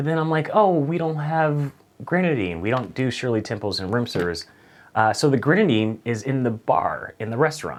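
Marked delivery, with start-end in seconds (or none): none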